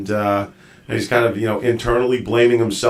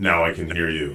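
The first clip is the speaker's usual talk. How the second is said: low, quiet, deep macho guy voice. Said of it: "let's just talk in deep, deep voice, guy voice".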